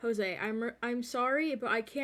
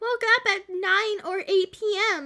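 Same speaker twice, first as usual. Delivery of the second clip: pitched-up, lifted put-on character voice; 9 semitones higher, 4 dB louder than usual. Reading out a text message reply in a voice like Paimon. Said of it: "Why do I sound like Paimon when I do that voice".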